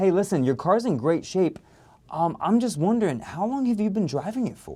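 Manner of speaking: interested, inquisitive voice. Demonstrating how to qualify a customer in service to sales, curious tone. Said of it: "add the, the curiosity and the tonality".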